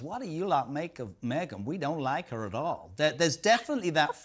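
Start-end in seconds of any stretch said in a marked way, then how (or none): 0.0-2.9 terrible, bad put-on American accent. Retelling what a man from Minneapolis said on a train, bad American accent. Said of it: "It was a terrible accent".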